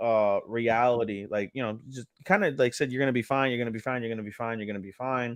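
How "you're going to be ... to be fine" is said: earnest, heartfelt, emotional tone, repeated. Retelling a character's words to her unconscious grandfather: imitating a heartfelt emotional plea. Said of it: "gives a very heartfelt, emotional".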